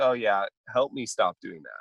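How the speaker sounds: ordinary talk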